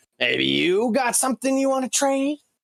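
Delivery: shouted, very high, rising yell. Voicing the dwarf calling out to a player: yelling in character. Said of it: "yells out to you".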